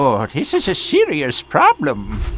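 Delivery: put-on, swooping goblin creature voice. While equipping new gear in a game, react to it in a goblin voice. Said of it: "you sound like a goblin".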